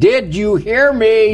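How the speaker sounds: put-on very high, stern old-man scolding. Recounting speaking to another family's child, retelling a raised voice. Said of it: "I raised my voice to their child?".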